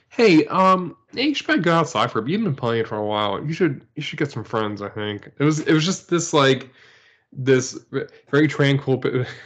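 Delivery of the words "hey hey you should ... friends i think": mock patronizing, condescending, talking-down tone. Imitating the Wii console telling players to take a break: mock condescending Wii voice. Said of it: "It's so condescending, too".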